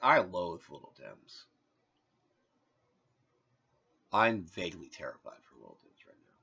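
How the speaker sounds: subdued, serious, grave somber tone. Dreading what happens to a character: somber. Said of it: "I kind of am acting kind of somber".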